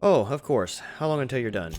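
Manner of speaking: sarcastic retort. Answering a threat of arrest in character: sarcastic. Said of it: "Is that sarcasm?".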